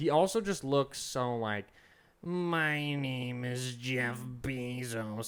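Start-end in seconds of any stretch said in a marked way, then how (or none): 2.2-5.3 very slow, drawn-out delivery. Mocking Jeff Bezos by doing the Monsters, Inc. receptionist voice. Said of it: "I'm just doing the fucking receptionist from Monsters, Inc".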